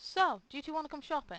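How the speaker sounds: shouted at full volume, loud and shrill. Voicing a character asking two others to come shopping: loud.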